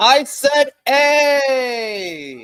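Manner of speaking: very high, very loud, grating, obnoxious put-on voice. Repeating a letter to a player who did not hear: loud, annoying put-on voice. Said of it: "needed me to sound like this".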